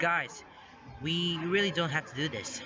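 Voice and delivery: ordinary talk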